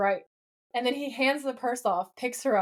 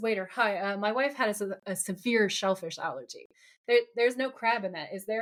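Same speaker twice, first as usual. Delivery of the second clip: usual speaking voice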